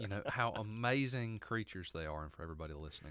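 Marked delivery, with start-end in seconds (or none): 0.3-2.2 dripping sarcasm with mock admiration. Praising fire ants in the south that bite: sarcastic. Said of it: "I hope you can just feel the sarcasm".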